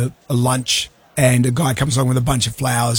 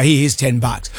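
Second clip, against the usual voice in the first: ordinary talk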